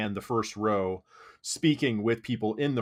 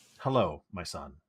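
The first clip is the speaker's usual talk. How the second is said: very polite, courteous, priestly tone; 5 semitones lower than usual. Voicing a priest who turns to greet a newcomer: very polite tone. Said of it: "in a very polite tone".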